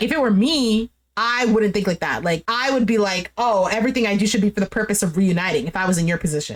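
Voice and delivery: plain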